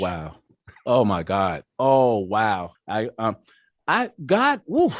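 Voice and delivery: overwhelmed, halting, slow, rising. Reacting to a question about the twelfth step, overwhelmed with emotion. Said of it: "Okay, let me calm down".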